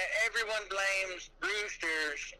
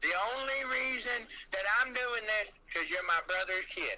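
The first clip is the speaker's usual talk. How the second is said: ordinary delivery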